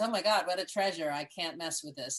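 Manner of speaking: normal talking voice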